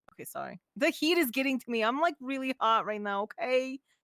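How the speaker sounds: plain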